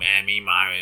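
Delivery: voice of a man with a throat hole. Retelling how an eighty-year-old acting teacher talks: imitating a man with a hole in his throat. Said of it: "He talks like that".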